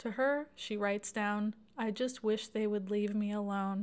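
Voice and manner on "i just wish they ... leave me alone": ordinary talk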